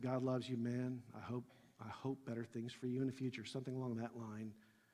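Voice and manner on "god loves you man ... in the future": quiet whisper, quieter than before. Retelling words said to a man sitting in a line: retelling a quiet whisper. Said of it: "I just whispered real, real quietly to him".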